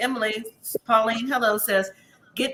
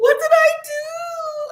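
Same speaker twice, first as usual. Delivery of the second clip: put-on crying voice, higher and louder; 5 dB louder than usual. Retelling what Sophie said while crying: mock crying, imitating Sophie. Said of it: "Sophie is crying".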